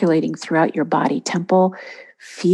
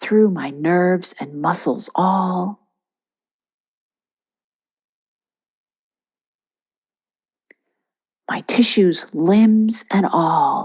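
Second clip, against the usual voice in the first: whispering. Leading an affirmation, saying it one more time: whisper. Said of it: "one more time in a whisper".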